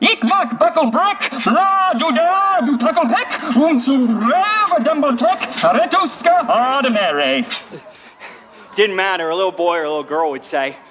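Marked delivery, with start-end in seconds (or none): 0.0-7.4 puppet voice, higher and slower. With a bucket on their head, the speaker talks as a puppet to children, puppet voice. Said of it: "It comes from a puppet voice".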